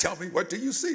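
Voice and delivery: loud, stern, harsh delivery. Retelling her mother's question at the mirror, retelling mother's harsh talking. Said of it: "she's talking harshly at me".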